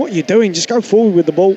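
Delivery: ordinary talk, nothing marked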